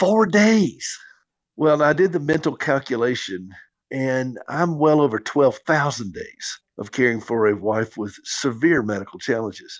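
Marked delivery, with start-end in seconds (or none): 0.0-1.0 mock fed-up, exasperated reply, pitched up. A husband caring for his wife retells a man's answer, imitating his exasperated tone. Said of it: "he exasperatedly said".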